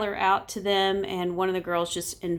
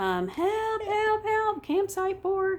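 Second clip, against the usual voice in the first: mock very high, long drawn-out screams; 12 semitones higher than usual. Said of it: "we just started screaming".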